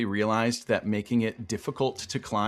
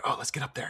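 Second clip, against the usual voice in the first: hushed, soft, egging-on whisper; 3 semitones higher, 6 dB quieter than usual. Retelling drunk people whispering about climbing a tower: imitating a whisper. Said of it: "kinda whispering to each other".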